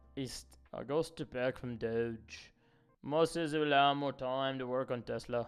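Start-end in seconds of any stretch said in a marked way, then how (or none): 0.7-2.5 put-on British accent, much slower. Quoting a news clip he heard, the speaker does Elon Musk with a British accent. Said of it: "I'm talking like he's got like a British accent".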